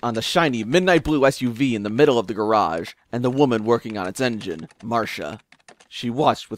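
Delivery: ordinary delivery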